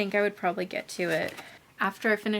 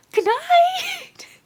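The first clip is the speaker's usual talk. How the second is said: hoarse, very high, very loud scream; 11 dB louder than usual. Retelling a character who screams out on seeing someone: imitating a hoarse scream. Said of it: "he screams out".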